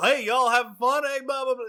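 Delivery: heavy southern drawl laid on thick, loud and quick. Imitating a big bald man who shuttles them around: big southern drawl. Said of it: "big southern drawl".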